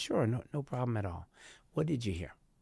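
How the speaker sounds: even, unruffled, soft and very calm tone. Retelling their own reply to an agitated woman, retelling a calm tone. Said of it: "in my tone, I just was very calm".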